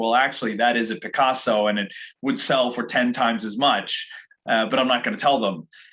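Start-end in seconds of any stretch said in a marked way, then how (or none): none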